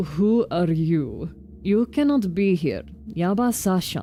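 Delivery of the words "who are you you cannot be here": put-on Russian accent, low. Showing the Russian accent they give a game character, in a low Russian accent. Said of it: "I did do it lower".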